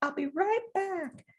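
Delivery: put-on tiny, sweet child voice, very high. Imitating the speaker's kids copying a phrase, in a sweet little voice. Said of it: "in this sweet little voice would say".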